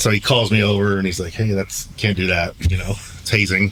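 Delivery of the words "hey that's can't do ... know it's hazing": ordinary talk, nothing marked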